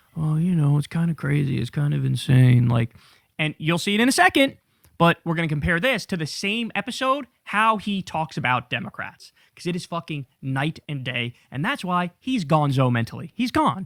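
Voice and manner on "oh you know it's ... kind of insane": gentle, mild, soft tone. Mocking a podcaster's soft tone about the war: imitating a soft tone. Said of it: "notice how soft this is. The tone is very like".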